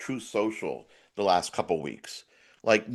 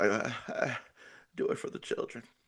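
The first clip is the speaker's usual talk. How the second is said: breathy near-whisper with flat, falling pitch; 9 dB quieter than usual. Complaining he can no longer do Clinton, the speaker attempts a Clinton impression. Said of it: "I can't do Clinton anymore".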